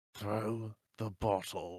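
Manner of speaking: words pushed quietly through clenched, gritted teeth. Acting out the scene without moving, the speaker says it through gritted teeth. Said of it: "trying to kind of through gritted teeth".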